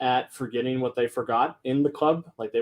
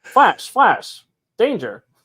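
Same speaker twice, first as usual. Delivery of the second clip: put-on very loud, old-time 1940s radio announcer voice; 9 semitones higher, 9 dB louder than usual. Brainstorming a game idea with a co-host, voicing a news snippet like a 1940s radio announcer. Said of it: "nineteen forties radio announcer voice".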